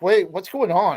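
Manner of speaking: acted startled, nervous, panicked blurt. Recalling being told he can't be in the room: retelling panicked speech.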